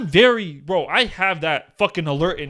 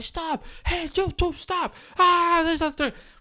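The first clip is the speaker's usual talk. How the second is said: mock high-pitched yelling, raised; 12 semitones higher, 4 dB quieter than usual. Retelling being chased, repeating what the chasers yelled out their window, retelling a yell. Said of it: "like yelling out their window".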